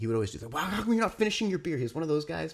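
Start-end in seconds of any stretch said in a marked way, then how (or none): 0.5-1.8 put-on, high-pitched, badgering, taunting yell. Retelling how an annoying guy mocked him: imitating someone yelling. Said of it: "yelling at me".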